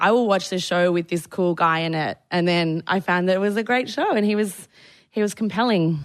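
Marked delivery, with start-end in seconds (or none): none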